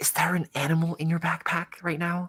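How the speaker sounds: hushed, whispering voice. Voicing a student who leans over to a classmate: whispering. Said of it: "lean over and whisper".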